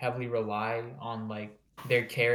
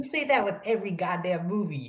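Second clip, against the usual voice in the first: raised-pitch complaining, grumbling delivery; 8 semitones higher than usual. Retelling what a friend says about his movie reviews: imitating a friend. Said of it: "and he goes like".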